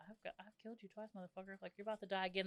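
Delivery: acted-out whisper. Acting out a woman whispering to a puppet in bed, imitating a whisper. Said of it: "you're like whispering to this puppet".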